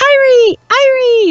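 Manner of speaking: very high squeak at the top of the range. Trying to sound like a bird, in a highest-pitch voice. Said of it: "if you do your highest pitch voice".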